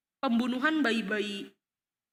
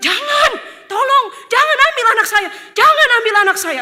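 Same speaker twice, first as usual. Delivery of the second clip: high, loud, desperate pleading. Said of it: "Lalu mereka bilang".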